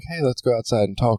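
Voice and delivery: imitated whisper. Retelling what is said to someone interrupting a meeting: imitating a whisper. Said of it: "kinda whisper to 'em".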